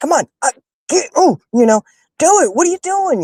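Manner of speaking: put-on excited shouting. Acting out how she shouts at someone in a fight on the screen; retelling an excited yell. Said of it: "I'm yelling at Mike".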